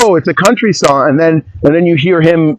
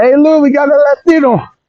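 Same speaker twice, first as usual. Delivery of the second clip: fake Latin American accent in a very high voice; 10 semitones higher than usual. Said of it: "I love doing the accent".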